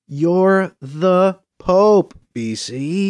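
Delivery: very slow, deliberate, condescending tone. [name] tells BC to his face, slowly and deliberately, as if explaining to a toddler. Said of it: "slowly and deliberately, as if explaining it to a toddler".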